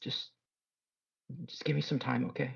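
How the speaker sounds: speaking quietly. Voicing a translator who turns a player away from the chief: hushed voice. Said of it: "speaks in a hushed voice".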